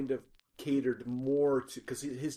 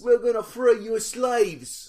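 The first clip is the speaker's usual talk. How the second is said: fake Cockney accent, higher and much louder; 9 semitones higher, 11 dB louder than usual. Imitating a british woman from a show: cockney accent impression. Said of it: "Like she's all chim chimney".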